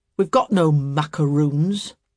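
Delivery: loud, surly, churlish, ungracious tone. Narrator reading a story, voicing a man answering at a gate: churlish. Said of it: "said the man churlishly".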